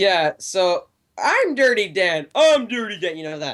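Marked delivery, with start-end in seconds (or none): 1.2-3.2 high-pitched, full cartoon character voice. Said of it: "fantastic SpongeBob impression".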